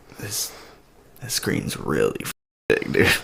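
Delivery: low, soft whisper full of awe.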